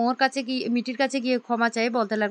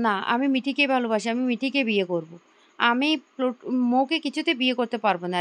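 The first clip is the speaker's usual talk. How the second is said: plain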